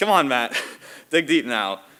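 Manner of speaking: very loud, high, desperate, pleading tone. Retelling what a coach called out at a hill mid-race: imitating Zelke's desperate urging. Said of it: "the way he said it, he was, like, it was, like, desperate".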